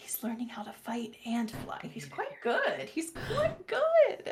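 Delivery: soft, hushed whisper. Voicing a character who speaks quietly to Stapes: whispering. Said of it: "she whispers to Stapes".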